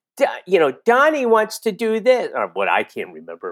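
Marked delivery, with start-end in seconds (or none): 0.2-2.3 very high, broad, dopey sitcom dumb voice. Showing how a sitcom role was played: imitating a broad dumb character voice. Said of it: "I just did it as broad and dumb".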